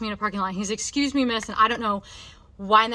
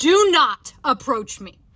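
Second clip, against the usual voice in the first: blunt, loud yelling; 3 semitones higher, 7 dB louder than usual. Retelling turning around on a man who said excuse me, ma'am: retelling her own yell. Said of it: "I literally yelled at him and I said".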